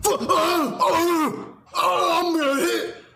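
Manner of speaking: very high, very slow, stammering flustered sputter. Mocking how someone reacts to the truth: imitating a flustered emotional outburst. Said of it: "Do you see how this is an emotional argument?".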